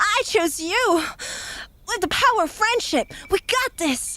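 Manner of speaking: high cartoon hero voice. Working out how to do the cartoon voice, in an Ash Ketchum voice. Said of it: "How do I do an Ash Ketchum voice again?".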